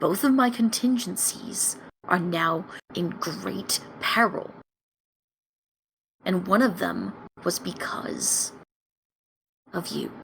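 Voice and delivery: barely audible, very quiet hushed whisper. A character leans in close to another party member, whispering as quietly as possible. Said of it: "starts whispering as quietly as possible".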